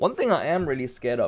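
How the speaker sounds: high-pitched voice breaking mid-line. Speaking to chat, starting a new thought: voice cracking. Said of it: "my voice cracked there".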